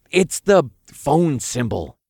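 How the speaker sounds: in a whisper. A narrator reads the speaker correcting a confused archangel about the phone button, whispering. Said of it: "I corrected in a whisper".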